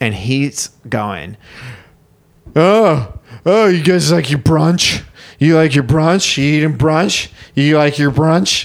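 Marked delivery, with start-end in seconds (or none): 2.5-8.7 put-on loud, sloppy, heavily slurred drunk speech. Retelling what a man on the sidewalk shouted at brunch diners: imitating drunk speech. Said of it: "Just totally drunk speak".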